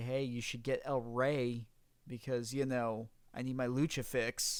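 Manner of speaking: ordinary talk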